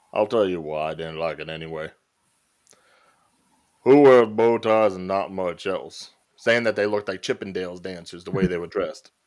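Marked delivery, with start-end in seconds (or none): 0.1-6.1 put-on country drawl. Quoting an actor's podcast remarks about a movie: Sam Elliott voice. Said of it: "my best, uh, Sam Elliott voice".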